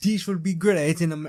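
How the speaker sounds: put-on German accent sounding French. Voicing a German man heading for the Americas: attempted German accent, sounds French. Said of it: "that's not even the German accent".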